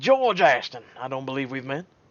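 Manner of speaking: very loud, booming, full voice. Voicing James's father introducing himself to the friends: George Ashton voice. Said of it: "I gotta give him the best voice possible".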